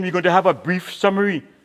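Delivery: ordinary talk, nothing marked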